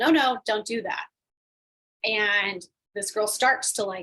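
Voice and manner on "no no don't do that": put-on sudden, loud hollered yell. Retelling stopping a hula dancer on stage: imitating own yell. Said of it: "And I yell".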